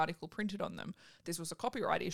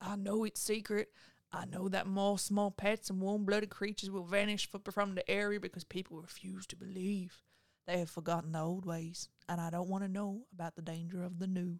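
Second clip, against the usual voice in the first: put-on southern US accent. Reading a passage aloud to the others, in a southern accent. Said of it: "They're probably southern, I just think it's more fun to read it like that".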